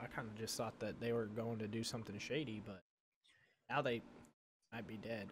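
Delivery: soft half-whispering under the breath. Speaking in character to a companion near the dead horses: half-whispering in character. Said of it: "I'm kinda, like, whispering".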